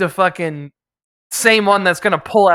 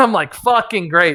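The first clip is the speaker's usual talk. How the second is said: ordinary delivery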